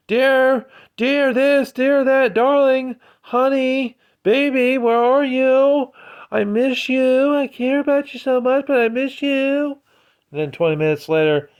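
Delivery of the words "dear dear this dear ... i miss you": very high, needy, drawn-out, slow clingy pining. Imitating a woman texting a man at work: imitating a clingy, needy partner. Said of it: "labels it as being too clingy or needy".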